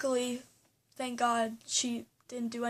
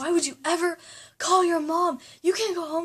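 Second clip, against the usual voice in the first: put-on furious freaking-out rant, high and loud; 6 semitones higher, 7 dB louder than usual. Retelling how she freaked out at the speaker for calling their mom; mimicking her anger. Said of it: "she got all angry at me".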